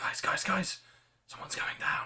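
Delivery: urgent, hushed whisper-shout. Narrating a scene, the speaker voices a character warning the group, whisper-shouting. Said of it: "whisper shouts at you all like".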